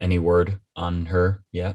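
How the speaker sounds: dropped, low-toned delivery. Walking past Sebastian, hand on his shoulder, he asks in a low tone. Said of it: "he says in a low tone".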